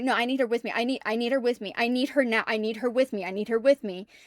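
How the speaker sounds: mock panicked, repetitive, pleading voice. Showing how their repeated plea sounded during a panic attack: imitating panicked repetitive pleading. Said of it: "There is a panic attack".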